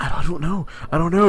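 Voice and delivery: sarcastic, pretending not to know. Retelling how Aaron answered a donation question: imitating sarcastic denial. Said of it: "He's clearly being sarcastic".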